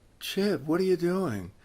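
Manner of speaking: sleepy, groggy, half-awake voice. Retelling a phone call that woke the other person: imitating a sleepy voice. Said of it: "In a sleepy voice".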